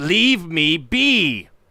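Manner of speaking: loud, high shout. Narrating a character's repeated reply to the players, shouting. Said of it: "He shouts out".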